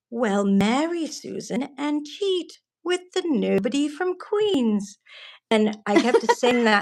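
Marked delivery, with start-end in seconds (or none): 0.1-4.9 put-on, pitched-up, grandmotherly British accent. Quoting a grandmother's line to her grandson, in a british accent. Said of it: "his grandmother in her British accent says".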